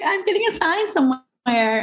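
very high, giddy, excited squeal.

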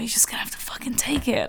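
fast, creaky whisper under the breath.

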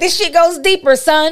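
high, pressing, frustrated mom voice.

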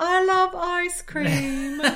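high, very slow, drawn-out bad British accent. Mocking a bad British accent after a post-credits reel. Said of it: "Kelly Kapoor's British, uh, Br-, Bridget Jones".

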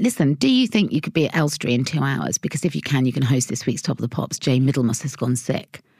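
plain

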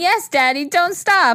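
high, intense screaming cry. Retelling a night stop on a back road, imitating screaming. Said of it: "And I'm screaming".

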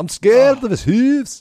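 very high, playful put-on Scottish lilt. Joking that hoof is fun to say: scottish accent. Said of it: "fun thing to say to Scottish accent".

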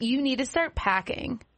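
play-acted nasty, bossy, motherly mean tone. Retelling what Mom told them today: imitating Mom's mean tone. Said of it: "she said it like that tone to me".

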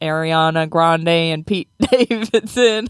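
very slow, put-on Southern drawl. Speaker quoting the other person's answer naming a couple, sudden southern accent. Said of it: "I'm speaking a southern accent all of a sudden".

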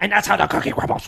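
loud, pushed, creaky voice. Repeating an impression attempt after a comment: Jim Carrey Grinch voice. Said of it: "you sounded like Jim Carrey Grinch".

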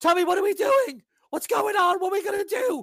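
put-on very high, loud, frightened child voice. Voicing a kid caught in a hostage standoff: frightened shaking kid. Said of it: "The kid's shaking".

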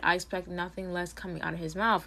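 ordinary talk, nothing marked

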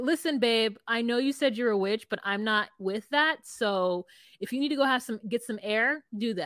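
plain

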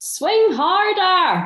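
put-on very high, loud yell in strong Scottish accent. Retelling a teammate's sledge from the boundary: big Scottish accent shouting. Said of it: "in a big Scottish accent".

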